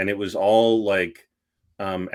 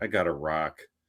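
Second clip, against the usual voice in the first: muttered under breath, lower and quieter; 4 semitones lower, 7 dB quieter than usual. Showing how a disappointed quote is said: under the breath. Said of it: "I'll say under my breath".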